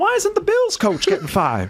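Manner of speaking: very high, swooping sing-song voice. Reading out one of Jordan's texts that makes you laugh, imitating Jordan's voice. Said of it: "I read them in his voice".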